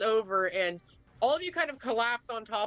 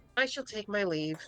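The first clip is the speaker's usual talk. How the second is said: faint, weak, feeble, barely-there voice. Voicing a character leaving through the front door: faint voice. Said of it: "they say in a faint voice".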